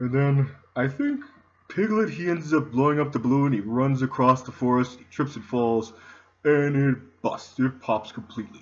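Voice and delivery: mopey, downcast, gloomy, depressed voice. A character telling a story, depressed voice. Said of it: "He kind of talks like me. He's got this depressed voice".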